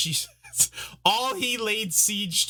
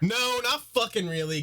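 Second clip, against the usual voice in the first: high, fed-up, exasperated, acted voice; 5 semitones higher than usual. Retelling a show character's reply to Varys: imitating exasperation. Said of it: "so kind of exasperated by it".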